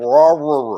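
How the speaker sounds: loud Airedale-like bark shaped into words. Answering a request to imitate the pet dog's dinner bark: imitating Baxter's Airedale bark. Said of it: "what's your imitation of Baxter's Airedale bark".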